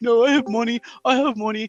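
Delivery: high, blubbering, sobbing, tearful insistence. Taunting someone by acting out how they broke down, imitating someone crying. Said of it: "you broke down crying. You're like".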